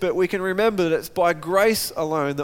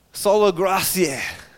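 sola gratia said with a put-on French accent. Naming the first sola in Latin, jokingly: French accent. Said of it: "I'll give it a French accent on a Latin word".

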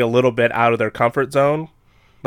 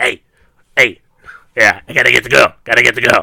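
loud, sleazy, weird bat character voice; 6 dB louder than usual. Describing a movie's bat who kidnaps the girl's dad: sleazy weird bat voice. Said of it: "weird bat that he talks like this".

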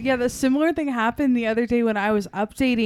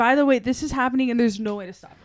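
ordinary delivery

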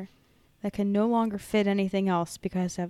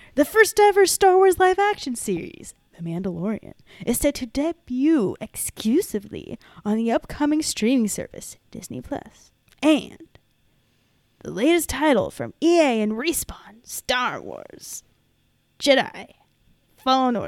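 bizarre hype-man announcer voice, loud and swooping; 5 semitones higher, 7 dB louder than usual. Reading a company announcement aloud, in a bizarre announcer voice. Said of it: "bizarre announcer voice".

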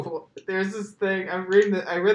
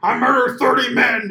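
loud, high-pitched, furious, unhinged rant; 6 semitones higher, 8 dB louder than usual. Retelling an angry lie said when upset: angry Alex Jones impression. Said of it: "when he's upset, he's like".

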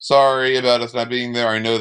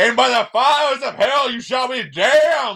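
put-on, very high, passionate preacher yell; 12 semitones higher than usual. Retelling what someone yelled while recording, imitating a yelling preacher. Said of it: "as if a preacher being like".

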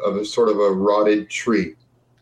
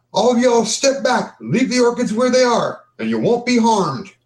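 very high, high-pitched shout, called out; 11 semitones higher than usual. An unseen voice shouts to the group sitting around camp: a shouted warning. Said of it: "you hear a voice shout out".

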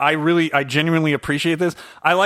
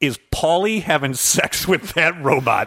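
normal talking voice

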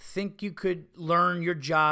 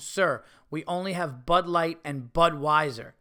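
mock snippy, snotty, nasty, dismissive tone with attitude. Retelling what a server said with an attitude: imitating a nasty tone. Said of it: "says with her nasty bitch tone".

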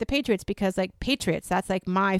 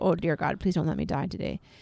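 muttered under breath, much quieter; 6 semitones lower, 8 dB quieter than usual. Retelling what she said inside the pop-up ice house, muttered under breath. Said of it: "Under my breath more than one time".

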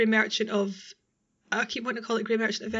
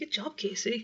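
patronising, talking-down voice, quieter; 5 dB quieter than usual. Showing how praise sounds, patronising, as if to a small child. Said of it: "like you're talking to a very small child".

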